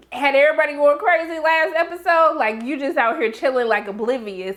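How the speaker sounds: usual speaking voice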